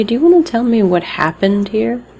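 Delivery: knowing sarcastic tone. Gesturing at images on a character's arm and questioning him: sarcastic. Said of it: "kind of in a, eh, sarcastic way".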